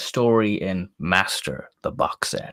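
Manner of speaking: bad, terrible put-on American accent. Telling another listener which story in a box set you have heard, in a terrible American accent. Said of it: "That's my terrible American accent there".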